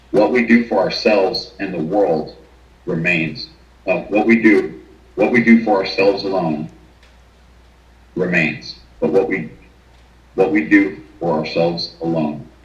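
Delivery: choked-up, emotional, words faltering, voice breaking. Speaker quoting the phrase on a grave, getting emotional. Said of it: "I'm getting a little emotional".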